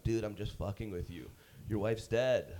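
plain

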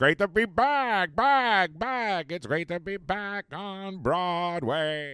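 put-on mumbling cartoon old man. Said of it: "You do a pretty good Mr. Magoo".

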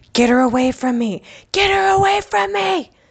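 mock shrill, very high, loud scream, rising in pitch. Retelling how a grandmother reacted to a child: imitating someone screaming. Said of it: "started screaming".

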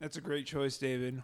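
soft mumble through a full mouth. Asked to talk with chocolate in the mouth, talking with mouth full. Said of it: "talk with chocolate in your mouth".

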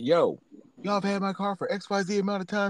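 put-on yelling. Recounting confronting a car dealership about a long-held car, retelling a yell. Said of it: "So I'm yelling".

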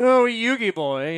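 high, loud, sneering, teasing, snooty voice. A fan describing how the villain Pegasus talks, in a teasy snooty Pegasus voice. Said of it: "teasy kind of snooty voice".

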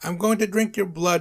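exasperated, fed-up yelling, high-pitched and fast. Narrator reads a vampire's line to the others, yelling in frustration. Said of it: "Nosferatu yelled, now getting frustrated".

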